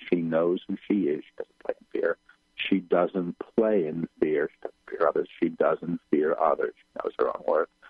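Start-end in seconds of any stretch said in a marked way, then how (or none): 1.2-2.2 whisper, soft and voiceless. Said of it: "I'm whispering the words as they come".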